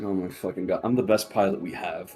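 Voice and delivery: eye-rolling, sarcastic tone. Voicing a character rolling his eyes at a lesson: eye-rolling, sarcastic. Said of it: "rolls his eyes, like".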